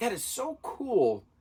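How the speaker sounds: high-pitched, slow, amazed gushing.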